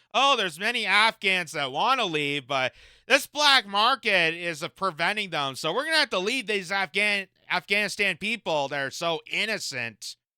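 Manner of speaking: ordinary delivery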